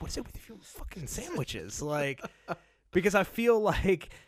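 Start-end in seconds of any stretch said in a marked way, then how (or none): 0.0-1.8 hushed, whispered grumble muttered under the breath. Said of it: "I say it under my breath".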